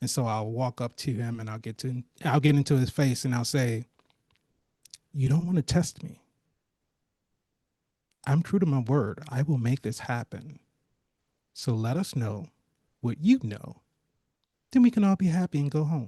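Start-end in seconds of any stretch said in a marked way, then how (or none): 5.1-16.1 lowered, serious, direct low voice. Threatening a character face to face: lowered, serious, direct voice. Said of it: "lowering the tenor of his voice, making it very serious, very direct".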